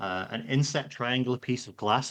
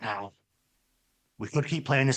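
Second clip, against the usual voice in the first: imitated low half-whisper. Retelling how a man leaned in close to speak, retelling a near-whisper. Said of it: "his voice drops to a bit of a whisper".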